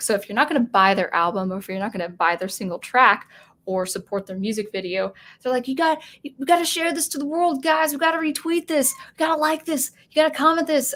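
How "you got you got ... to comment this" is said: manic, insistent, high, crazed, frantic tone. Imitating artists urging fans to share their music: imitating crazed urging. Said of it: "kind of this crazed, you know, feeling".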